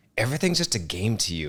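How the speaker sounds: snide, sarcastic attitude. Retelling what dad said about everything being a game: imitating a sarcastic remark. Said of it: "he said it with a kind of a sarcastic attitude".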